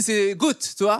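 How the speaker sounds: fake Moroccan-tinged French accent. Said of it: "je fais l'accent juif marocain".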